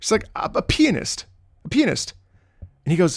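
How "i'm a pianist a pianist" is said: put-on elderly woman character voice. Telling a joke about a substitute teacher and her pianist line, imitating an old lady. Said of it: "like she's like an old lady".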